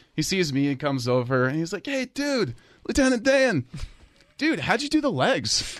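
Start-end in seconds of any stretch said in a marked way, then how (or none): 1.9-5.8 put-on very high, boozy, tipsy bar-guy voice. Retelling what a man at a bar said: imitating a tipsy guy. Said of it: "he's a little toasted".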